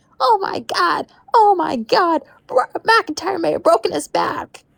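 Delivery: very high, slow, drawn-out cracking voice. Recalling a commentator's call of a wrestling spot: imitating Michael Cole's cracking voice. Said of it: "his voice cracked".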